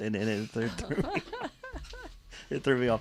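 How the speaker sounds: laughing through the words, swooping pitch. Apologizing for being thrown off by a text: laughing while talking. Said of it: "I'm laughing because Rock Evans is sending me text".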